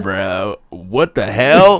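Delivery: put-on American accent. Showing which accent bit drew no objection, in an American accent. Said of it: "when I did the American".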